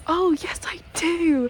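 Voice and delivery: over-the-top, stagey, theatrical pantomime delivery. Retelling answering a passerby who asked about a ball, theatrical pantomime delivery. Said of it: "Like, I'm in some pantomime. Like, I genuinely said it like that".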